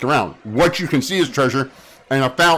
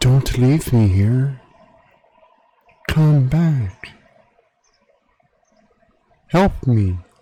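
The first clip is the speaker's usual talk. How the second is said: whispered voice. Narrator voices an unseen voice as the listener turns to leave, whispered voice. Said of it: "you hear a whispered voice".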